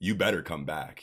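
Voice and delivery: ordinary talk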